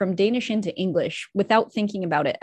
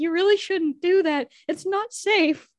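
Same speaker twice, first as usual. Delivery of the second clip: acted, playful teasing tone pitched very high; 11 semitones higher than usual. Retelling grandpa laughing at a preposition mistake: imitating grandpa's teasing. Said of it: "he would always tease me and be like".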